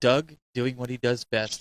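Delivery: mock, very serious tone. Retelling what the other speaker's wife said in her video: imitating someone all serious. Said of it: "she was just, like, all serious".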